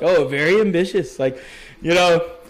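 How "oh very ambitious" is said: mocking, thick, heavy sarcasm. Retelling an interviewer's reply to a career goal: imitating a sarcastic remark. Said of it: "being sarcastic as hell".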